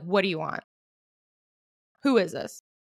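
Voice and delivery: annoyed, angry, hostile tone. Setting up a practice phone role-play, speaker shows how they'd answer, acting angry. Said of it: "if I'm angry".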